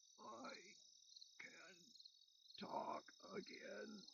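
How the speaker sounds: very slow, harsh, breathy, gravelly, hushed rasp. Reading a story aloud, voicing a man's line in a grating, gravelly voice. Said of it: "in that grating, gravelly voice".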